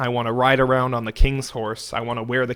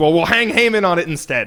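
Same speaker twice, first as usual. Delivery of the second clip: mock, loud, high, furious drunken outburst; 6 semitones higher, 5 dB louder than usual. Retelling a king's decree in his drunken rage: imitating the king's drunken rage. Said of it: "in his drunken rage, he says".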